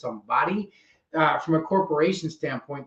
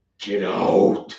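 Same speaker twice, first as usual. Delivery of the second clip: deep devil-like put-on voice; 8 semitones lower, 4 dB louder than usual. Retelling a teacher ordering a student out of class: imitating a devil-like voice. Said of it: "it was like the devil".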